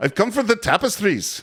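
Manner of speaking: put-on Scottish accent. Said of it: "it's a Scottish accent".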